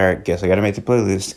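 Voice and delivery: normal talking voice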